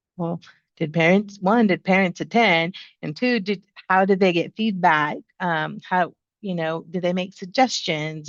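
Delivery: ordinary talk, nothing marked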